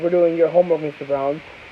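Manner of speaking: ordinary talk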